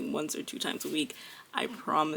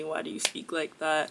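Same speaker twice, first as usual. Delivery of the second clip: ordinary delivery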